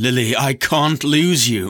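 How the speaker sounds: slow, urgent, insistent pleading tone. Gripping her hand, a man presses a reluctant woman, urging. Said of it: "he gripped her hand and urged".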